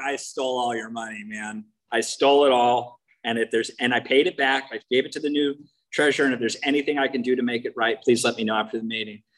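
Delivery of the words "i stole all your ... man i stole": ordinary delivery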